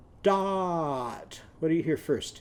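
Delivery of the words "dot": dot stretched slow and high. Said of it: "let's say that word slowly".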